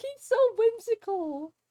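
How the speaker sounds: high, slow, gushing delight.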